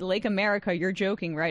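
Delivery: ordinary delivery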